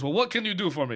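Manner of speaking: put-on Middle Eastern accented speech. Retelling what a caller said, imitating a Middle Eastern accent. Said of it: "Now he's Armenian".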